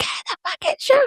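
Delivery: mock yell pushed out in breathy whisper. Retelling telling the kids to shower after hours: imitating her own yelling. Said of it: "when I've been yelling for five hours".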